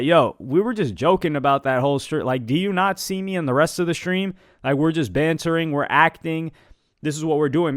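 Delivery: normal talking voice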